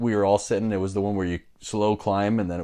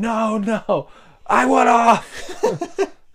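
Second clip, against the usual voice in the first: very high, very slow, drawn-out frightened panicked scream; 7 dB louder than usual. Retelling a ride starting to climb, retelling a panicked scream. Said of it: "I was screaming".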